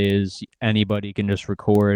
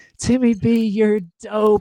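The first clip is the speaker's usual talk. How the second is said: very high, drawn-out shrieking cheer; 13 semitones higher, 3 dB louder than usual. Retelling what drunk ladies in the front yelled: imitating drunk ladies screaming. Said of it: "they're just screaming".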